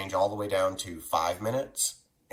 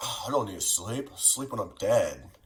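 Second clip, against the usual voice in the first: casual, laid-back dude-bro voice; 2 semitones higher than usual. Mocking someone who overtrains and skips sleep, in a bro voice. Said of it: "That's my bro voice".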